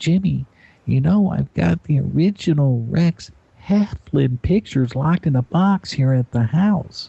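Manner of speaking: kindly, unhurried, high, slow sweetheart voice. The speaker retells what a woman on the show told him, imitating Ann's voice. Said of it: "but I'm going to imitate you".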